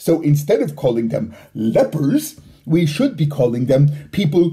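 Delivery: ordinary delivery, nothing marked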